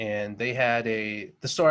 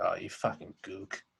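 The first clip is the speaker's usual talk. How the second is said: furious, half-muttered, quieter delivery; 3 semitones lower, 7 dB quieter than usual. Retelling what an angry guy said back: imitating an angry half-muttered insult. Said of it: "got so pissed at me ... somewhere between, like, under his breath and this volume".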